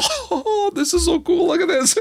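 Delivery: mock very high, giggling, giddy schoolgirl excitement. Retelling an excited reaction, acting it out with imitated schoolgirl giggling. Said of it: "giggling like a little schoolgirl".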